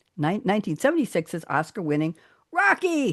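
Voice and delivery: ordinary delivery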